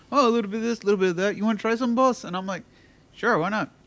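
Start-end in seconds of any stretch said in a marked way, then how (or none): 0.1-2.2 put-on Indian accent, easy, relaxed tone. Retelling a guy offering his weekend food, in a put-on Indian accent. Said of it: "Like your Indian accent, too".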